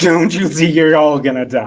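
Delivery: booming, very loud grown-up voice. Urged to try again, the speaker repeats the warning in a big boy voice. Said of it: "Try that again with your big boy voice".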